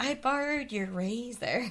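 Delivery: very creepy, slow, drawn-out mock voice.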